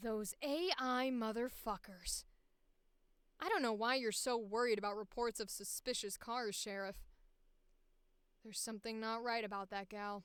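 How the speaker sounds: put-on low, older-sounding character voice. Voicing an older character talking to the Sheriff, in a low older voice. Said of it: "Let's just do a regular low voice".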